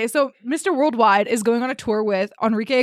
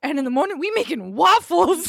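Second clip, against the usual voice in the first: pitched-up, high, cartoon-like voice; 6 semitones higher than usual. Retelling a line quoted from Shrek yesterday: quoting Shrek. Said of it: "I quote Shrek way too much".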